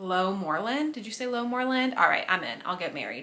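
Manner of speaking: normal talking voice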